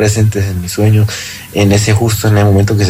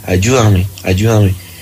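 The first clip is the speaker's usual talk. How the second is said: ordinary talk, nothing marked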